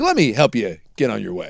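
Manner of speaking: overly polite, accommodating, sing-song voice. Retelling a police stop of a famous driver: imitating a very polite cop. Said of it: "the cop's like".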